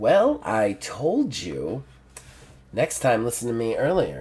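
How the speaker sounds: soft, purring, female feline cat voice. Narrating a scene, an unseen female voice speaks: purring female cat voice. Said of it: "a female voice, but with kind of like a cat purr to it".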